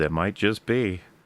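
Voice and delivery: mock mildly smug, knowing tone. Retelling a character's reply about something alive out there: imitating a smug reply. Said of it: "in a kind of borderline smug way".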